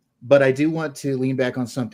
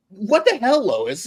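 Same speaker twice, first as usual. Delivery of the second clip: very high, squeaky delivery; 11 semitones higher, 4 dB louder than usual. Describing the new Superman actor's voice, doing a squeaky David Corenswet voice. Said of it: "that squeaky kind of".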